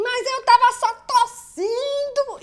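comic innocent-sounding squeal, very high and very slow. Retelling a boy ordered out who protests he only coughed, imitating his funny protest. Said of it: "falou de um jeito tão engraçado".

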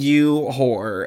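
ordinary talk

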